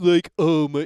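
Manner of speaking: slow, dragged-out stupid-sounding voice. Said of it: "that stupid voice".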